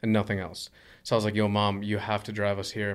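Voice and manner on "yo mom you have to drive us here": plain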